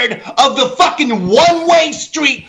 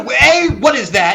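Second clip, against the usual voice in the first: ordinary talk, nothing marked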